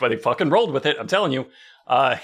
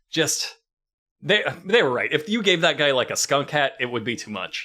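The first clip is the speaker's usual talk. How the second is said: ordinary delivery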